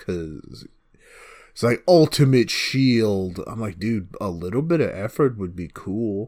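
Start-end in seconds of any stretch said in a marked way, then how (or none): none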